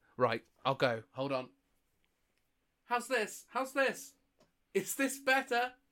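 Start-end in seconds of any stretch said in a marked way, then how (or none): 2.9-5.7 loud shouting as from afar, much higher, slower. Sent across the street and told to shout, shouting from across the street. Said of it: "You'll have to shout".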